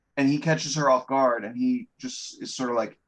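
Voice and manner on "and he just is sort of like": ordinary talk, nothing marked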